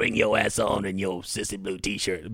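put-on strong Louisiana bayou accent. Quoting what Ed Orgeron said to a UCLA fan: Ed Orgeron Cajun accent impression. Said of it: "Do his voice again. ... I don't have enough of the bayou in it".

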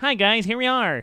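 put-on high, squeaky little pipsqueak voice. Asked to voice a little skinny pipsqueak guy with glasses: squeaky pipsqueak guy voice. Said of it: "I do a really, really squeaky voice".

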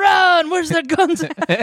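put-on shrill, very high, drawn-out screaming. Retelling Miss Pat's story; imitating Miss Pat screaming. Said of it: "Miss Pat just screaming".

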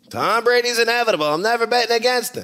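bad, very high, loud Pittsburgh accent. Quoting what another speaker said weeks ago: Pittsburgh accent imitating Damashek. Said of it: "That was the Pittsburgh accent".

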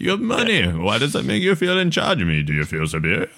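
composed, calm, sinister and menacing evil villain tone. Quoting a villain talking to a man in his office, mock calm, evil tone. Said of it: "In the most calm, evil tone".

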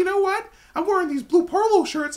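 youthful voice pushed way up. Retelling his own words from school days: youth voice like Mickey Mouse. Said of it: "Every time I go to my youth voice, I talk like Mickey Mouse".

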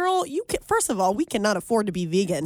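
ordinary talk, nothing marked

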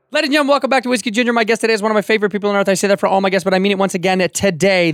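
breakneck, very fast ad-announcer rattle. Welcoming listeners back and introducing today's guest: fast talking like the Micro Machines guy. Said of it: "You sound like the Micro Machines guy".

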